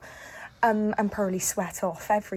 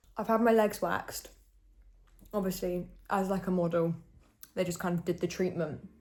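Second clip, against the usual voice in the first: speaking with mouth full, chewing. Speaker chatting about their day while eating, talking with mouth full. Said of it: "I'm eating with my mouth full now".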